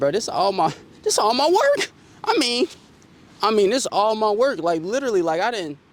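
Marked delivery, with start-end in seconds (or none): 0.0-1.9 put-on tearful sobbing, high, swooping crying wail. Retelling own words to a girlfriend that night: retelling own crying. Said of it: "I'm, like, crying, bro".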